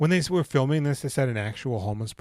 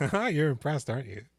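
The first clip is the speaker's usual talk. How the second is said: ordinary talk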